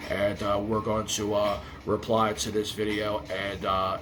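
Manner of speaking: low, droning, mock monotone with zero energy. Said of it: "and you sound like this?".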